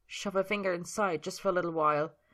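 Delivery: ordinary delivery, nothing marked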